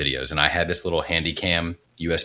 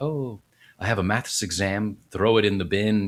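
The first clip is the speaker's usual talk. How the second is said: put-on American accent over Irish voice, pitched up; 5 semitones higher than usual. Recalling her Dublin days, an Irish speaker quotes herself in an Irish person's American accent. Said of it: "an Irish person trying to do an American accent".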